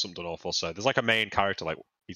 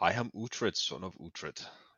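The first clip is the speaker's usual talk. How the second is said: quiet put-on old English accent; 6 dB quieter than usual. Questioning a TV character's accent with co-hosts, doing an Uhtred impression. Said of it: "What even is his accent?".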